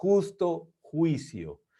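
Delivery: said very slowly with wide-pitched emphasis.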